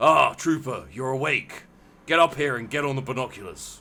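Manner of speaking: rough-edged, gruff, rough voice. A narrator voices someone waking Trooper up, gruff voice. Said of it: "you hear a gruff voice say".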